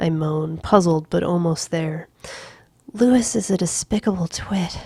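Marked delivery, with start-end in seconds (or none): 2.9-4.8 breathless gasp. Reading a story aloud, a character interrupting her partner: gasping. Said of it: "she gasps".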